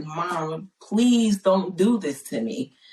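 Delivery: put-on earnest imploring, begging tone. Recounting praying for her mother's life, retelling a plea to her mom. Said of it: "I'm pleading".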